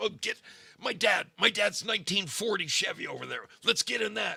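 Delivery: very high-pitched, frantic, freaked-out voice. Retelling how the car's owner reacted when his Bronco wouldn't start, imitating someone freaking out. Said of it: "He is freaking out".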